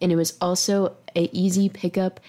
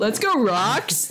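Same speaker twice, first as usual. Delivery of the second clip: put-on cheering podcast-host voice; 3 semitones higher than usual. Doing an impression of Tyler from a podcast, imitating Tyler. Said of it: "That's my Tyler impression".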